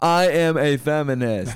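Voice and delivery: very slow celebrity voice, every word drawn out. Doing a celebrity impression the others asked for: Tina Fey impression. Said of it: "This is my Tina Fey impression".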